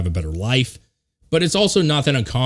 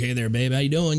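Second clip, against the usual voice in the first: smooth, flirty mock delivery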